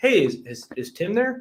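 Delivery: curious, wondering, high, unhurried tone. Demonstrating the opening line of a phone call, in a curious tone. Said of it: "I'll give a quick demonstration of what I mean by curious tone".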